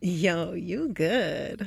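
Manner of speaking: very low, flirtatious voice. Asked to say the line one more time, flirty.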